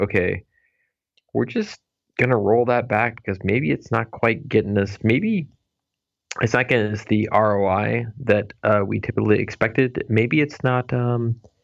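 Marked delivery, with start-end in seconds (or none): none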